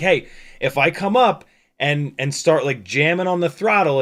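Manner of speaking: plain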